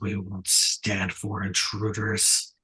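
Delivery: rasping, rough, low bass rumble. A game master voices a figure behind the listener's shoulder, deep and raspy. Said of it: "deep and raspy".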